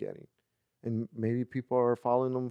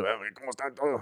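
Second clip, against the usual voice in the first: strained put-on voiceover voice, throat-straining. Showing the voice used for movie voiceovers that hurts the throat: throat-straining voiceover voice. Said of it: "doing this voice all the time".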